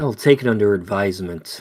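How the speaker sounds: low, smoky, sultry voice. Voicing the Duchess answering a plea from the players: smoky, sultry voice. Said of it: "in a smoky, sultry voice".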